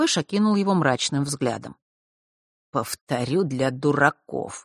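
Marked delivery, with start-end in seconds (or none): 2.7-4.6 ironic, sardonic, through gritted teeth, slower. Answering someone's mocking idea, ironic, through gritted teeth. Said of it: "с иронией процедил он".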